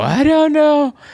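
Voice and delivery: very high, loud, muppet-like, play-dumb dopey voice. Telling how to answer an auditor by playing dumb: put-on playing-dumb voice. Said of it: "are you a Muppet?".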